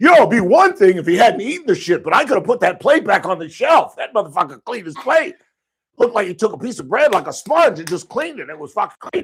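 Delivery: mock livid tirade, very loud, high and shrill. Retelling a furious complaint heard from the office hallway, retelling a livid rant. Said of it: "is fucking livid".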